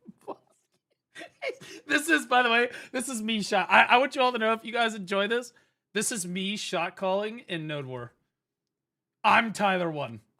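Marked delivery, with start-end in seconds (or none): 0.2-1.8 put-on, hushed, breathy, urgent whisper. Repeating a line from the clip: imitating a scream. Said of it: "I was screaming".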